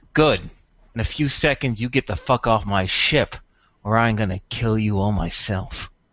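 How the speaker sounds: rough, gruff, menacing and hostile tone. Game master voices Wither speaking for the first time: gruff, hostile voice. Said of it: "in a gruff, hostile voice".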